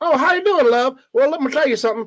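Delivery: put-on shrill, loud hee-haw Southern accent, pitched way up. Retelling what a woman in the bar said on arrival, in a hee-haw Southern accent. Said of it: "these people had like hee-haw accents".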